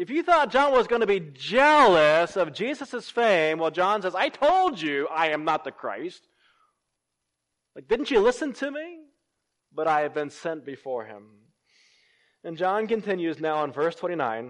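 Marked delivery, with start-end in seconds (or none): 4.1-11.2 mock sarcastic tone, louder. Retelling John's reply that he is not the Christ: imitating a sarcastic tone. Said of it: "almost with a tone of sarcasm".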